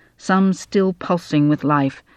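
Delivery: ordinary delivery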